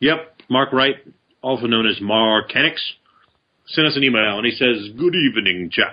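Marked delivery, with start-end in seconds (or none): 5.0-5.9 classic vampire count voice. Reading out an email someone sent in, in a Dracula voice. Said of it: "That was my Dracula voice".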